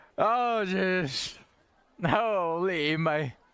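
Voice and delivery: very slow, winded, gasping, out of breath. After asking to hear TNT and compass again, out of breath. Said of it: "I'm out of breath".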